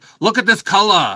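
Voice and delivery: put-on loud, shrill, booming, high, thick New Jersey accent. Speaker quotes a woman from Jersey who handled releases: thick Jersey accent. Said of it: "she would have this thick Jersey accent".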